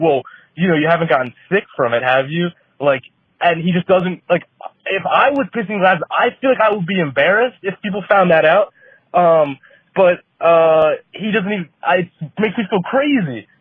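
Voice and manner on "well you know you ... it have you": irritated, mad, defensive pushback. Retelling a roommate's reply to a complaint: imitating roommate getting mad and defensive. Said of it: "he gets all mad and defensive".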